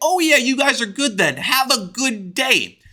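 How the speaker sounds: offhand, indifferent tone. Retelling a fight at school, the speaker imitates the teacher's reaction, mock-indifferent. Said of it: "He couldn't give less of a fuck".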